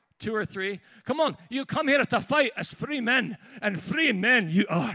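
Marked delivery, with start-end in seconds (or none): 1.5-5.0 stirring, rousing, loud delivery. Speaker, after asking the audience for fans of the film, does a Braveheart impression. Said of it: "That's my Braveheart impression".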